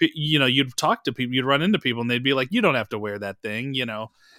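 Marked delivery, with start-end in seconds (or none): 2.5-3.7 kindly, easy-going, nice, friendly tone. Retelling what people said about wearing a mask, imitating a nice tone. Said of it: "they would say it like nice".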